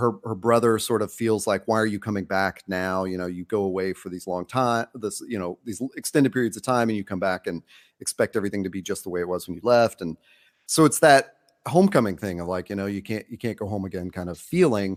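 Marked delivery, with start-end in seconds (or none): none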